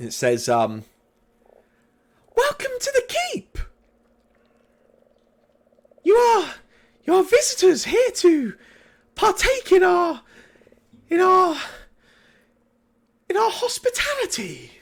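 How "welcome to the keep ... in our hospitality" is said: very high, loud voice ringing out, calling. Game master voices an unseen speaker greeting the players entering the keep, high-pitched voice. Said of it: "a high pitched voice um, speak out".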